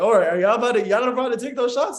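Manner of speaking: playfully joking delivery. Speaker retells turning to a girl and joking with her, retelling a joking remark. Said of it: "kind of like being joking".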